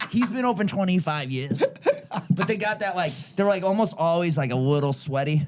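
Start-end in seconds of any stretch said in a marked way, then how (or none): 0.1-1.6 higher, clipped Boston guy voice. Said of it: "that clipped way of".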